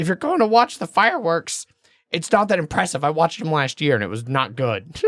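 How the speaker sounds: put-on high elderly woman's voice. Retelling what a lady told them while they read the sign: old lady voice. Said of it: "I'm doing kind of an old lady voice".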